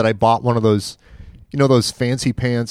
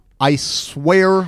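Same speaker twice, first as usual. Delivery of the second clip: usual speaking voice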